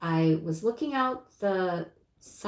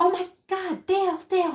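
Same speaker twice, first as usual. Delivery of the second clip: mock yelling, very high and shrill; 12 semitones higher, 4 dB louder than usual. Recounting spotting a fox heading toward the ducks, retelling a yell. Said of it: "And I'm yelling at him".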